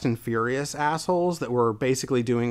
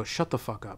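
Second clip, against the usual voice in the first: deadpan, dead straight delivery, said under the breath; 9 dB quieter than usual. Retelling own reply to a group of guys: retelling own deadpan line. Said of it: "Just, just deadpan".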